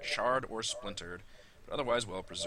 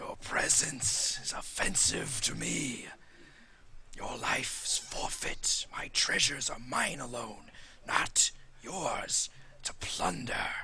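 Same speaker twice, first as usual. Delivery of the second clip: deliberate, slow, drawn-out spectral wraith voice. Voicing a ghostly wraith that threatens the intruding party: voicing a wraith. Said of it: "he raises up and says".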